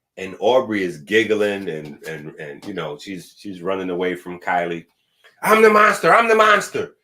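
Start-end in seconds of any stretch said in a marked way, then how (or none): 5.4-6.9 very loud, high, shrill playful yell. Retelling a game of chase, quoting Kylie, imitating Kylie yelling. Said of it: "Kylie is yelling out".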